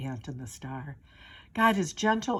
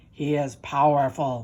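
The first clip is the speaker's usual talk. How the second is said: loud, growling bear voice; 3 semitones lower, 5 dB louder than usual. Narrator reads a story where animals argue, growling bear. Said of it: "growled the bear".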